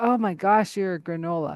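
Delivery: ordinary delivery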